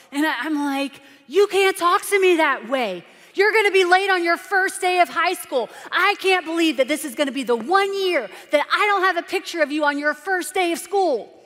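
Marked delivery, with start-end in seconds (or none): 1.3-11.3 raised, pitched-up yell bursting past restraint. Retelling a morning fight with her son: retelling her own yelling. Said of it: "I could hear myself starting to yell".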